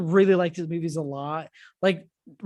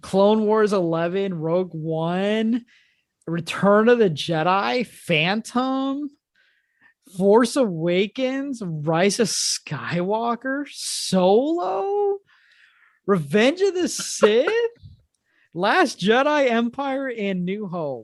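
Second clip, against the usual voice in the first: teasing, mocking read, one word drawn out; 3 semitones higher than usual. Reading the other speaker's ranking back to them: mocking voice. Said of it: "where you read my ranking in a mocking voice".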